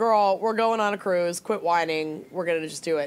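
ordinary talk, nothing marked

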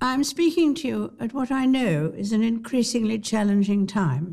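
mock upper-class British accent. Doing a posher impression when asked: Queen Elizabeth II impression. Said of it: "The Queen".

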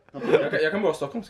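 ordinary delivery

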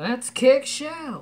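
very high, tough cartoon-style belted shout. Moving on to the Raphael figurine, doing a Raphael impression. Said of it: "That's my Raphael impression".

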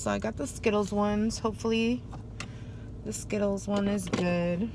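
very disappointed, let-down tone. Speaker who settled for the Skittles flavor, sounding disappointed. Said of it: "I'm sounding like hella disappointed right now".

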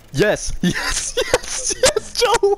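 high, loud, wild, ecstatic yelling.

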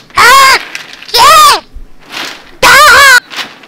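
frantic outburst. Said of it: "Okay, calm down".

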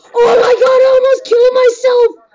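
frightened. Player nearly kills themself using the bazooka in a game; freaking scared. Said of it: "I'm freaking scared right now".

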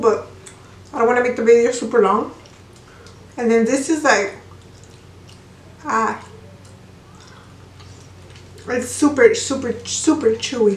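speaking with mouth full of food. Taste-testing food on video, apologizing mid-bite, talking with mouth full. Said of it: "I'm sorry that I'm talking with my mouth full".

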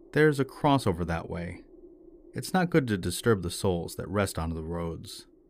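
ordinary delivery

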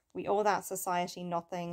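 ordinary talk

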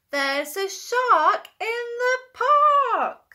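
very high shout, yelling with all his might. Reading a picture book aloud, a boy yells: yelling with all his might. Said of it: "Timothy yells with all his might".

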